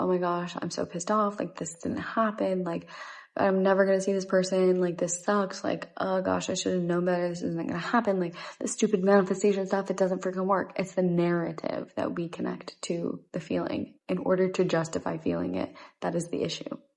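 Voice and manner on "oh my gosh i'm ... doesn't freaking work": ordinary talk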